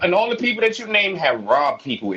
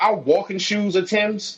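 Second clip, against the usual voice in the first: ordinary delivery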